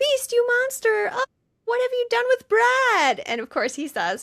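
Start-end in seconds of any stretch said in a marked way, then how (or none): 0.0-3.2 shrill, very high yelling. Retelling a scene where Janet hits him in the chest: imitating Janet yelling. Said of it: "she hits him in the chest yelling".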